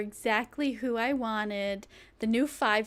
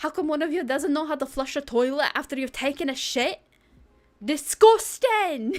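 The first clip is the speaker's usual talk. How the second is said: loud, put-on Scottish accent; 4 semitones higher, 6 dB louder than usual. Streamer playing a game on stream, speaking in a Scottish accent. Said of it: "That's my Scottish accent".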